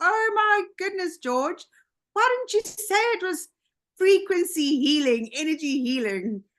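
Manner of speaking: high, excited, amazed gasp of delight.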